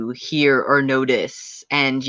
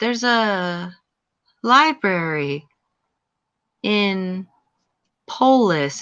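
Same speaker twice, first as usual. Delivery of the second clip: very slow, trance-like voice in broken, halting phrases; 5 semitones higher than usual. A game master voices a woman in a trance speaking to the players, very slow and trance-like. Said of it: "as she says very slowly to you guys".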